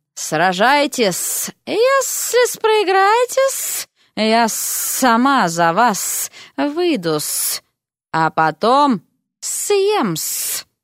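hissing, sibilant delivery. Narrator reads a woman's words to a fighter before his arena bout: hissing. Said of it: "прошипела".

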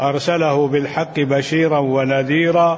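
ordinary talk

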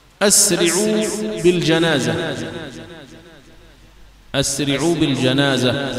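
plain

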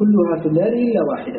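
normal talking voice

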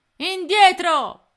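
shrill, very high, very loud yell. Reading Codanera's line as Tony is forced onto the plank, shouting. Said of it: "gridò Codanera".

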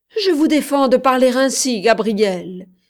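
loud, cried-out exclamation. A woman answers a man's mocking question, crying out. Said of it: "s'écria-t-elle, les yeux brillants".

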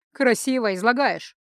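wry smirk. Narrator reads Shershi's retort to Roshel, with a smirk. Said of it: "с усмешкой парировал Шерши".

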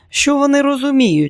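very high, contemptuous, scornful huffing snort. Narrator reading Kate answering her mother Margaret, contemptuous snort. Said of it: "зневажливо пирхнула Кейт".

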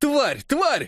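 very high, shrill, horrified crowd shout. Narrator reading the people's cries heard from all around, crowd shouting in horror. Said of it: "слышалось отовсюду".

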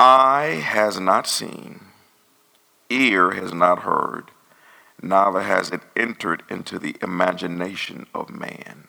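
slow, deliberate, carefully paced reading aloud. A speaker reading a passage aloud slows down after reading too fast: slowed-down reading. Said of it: "Let me slow down".

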